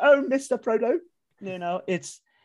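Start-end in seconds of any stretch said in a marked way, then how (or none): 0.0-1.0 frightened voice lifted to high pitch. Retelling a film scene where the poor, scared man is questioned: scared Sam impression. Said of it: "And he goes".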